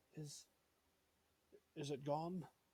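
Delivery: put-on hushed whisper, old man voice. Voicing a frightened old man in a cellar, whispering to the players: whispering old man. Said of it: "he whispers to you".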